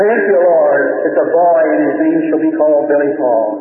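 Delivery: ordinary delivery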